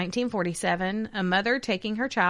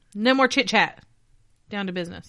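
stern, no-nonsense voice, louder; 4 dB louder than usual. Co-host ends the chit-chat to start the show, in a stern mom voice. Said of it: "I had to use my mom voice".

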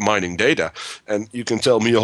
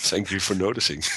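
dry sarcastic mocking tone, quieter; 7 dB quieter than usual. Replying to another speaker who dismissed an example as not new: sarcastic. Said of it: "that was way too sarcastic for me today".

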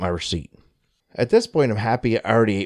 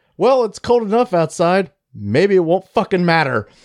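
amused with a chuckle, pitched up; 8 semitones higher, 4 dB louder than usual. Retelling what a guy at the checkout said, retelling a chuckling retort. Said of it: "just kind of chuckles and retorts".

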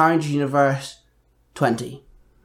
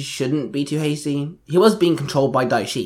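usual speaking voice

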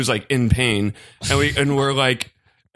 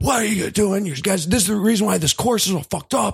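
mock angry man's high, furious scolding scream; 8 semitones higher than usual. Retelling how a man caught them making divots and was screaming: imitating a man screaming. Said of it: "screaming at us".

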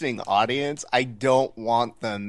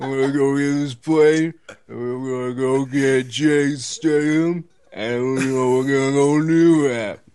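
loud, slow, drawn-out tough-guy voice, rambling; 2 semitones higher, 5 dB louder than usual. Doing a joke impression of an action movie line: Sylvester Stallone impression. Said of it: "that was Slice Stallone having a stroke".

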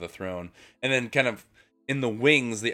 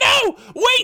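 shrill, very high, very loud panicked screaming; 10 dB louder than usual. Describing a scene, the speaker imitates a man screaming as he's dragged out. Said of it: "is being dragged out and screaming".

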